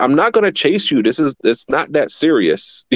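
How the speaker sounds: slow, unhurried, high-pitched yell. Recalling adult offenders who ran from him in the streets: retelling a yell at offenders. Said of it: "I'm yelling at them like".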